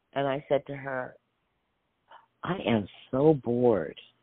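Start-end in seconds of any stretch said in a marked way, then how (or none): 2.4-4.0 put-on whisper, lower. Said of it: "I really, really whispered".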